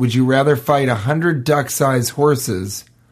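normal talking voice

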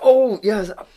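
heavily sarcastic. Retelling what he said to a customer in the shop: imitating his own sarcastic remark. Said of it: "no need to get sarcastic".

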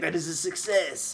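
obviously put-on, very fake French accent. Retelling a movie botany teacher's line, in a very fake French accent. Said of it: "It's clearly just a guy's doing this accent".

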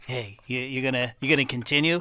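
plain, conversational delivery. Acting out Jeff kneeling down and asking a player: imitating Jeff. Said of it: "he's just like".

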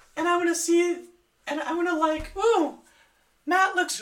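put-on girly voice, pitch pushed very high. Demonstrating a dating app as a made-up woman: girl impression. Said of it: "Here's my best girl impression".

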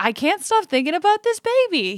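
very high, giddy, rising gush of excitement. Retelling a clip of an interviewee hearing about a baby: imitating an excited Mandy Patinkin. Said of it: "He was just so excited".

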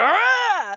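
high, loud, guttural outburst.

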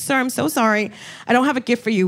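mock courteous, careful, apologetic polite tone. Retelling an apology to a drunk heckler: imitating own polite reply. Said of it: "I was still trying to be polite".

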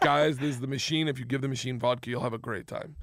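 ordinary talk

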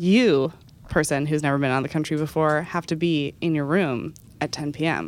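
plain

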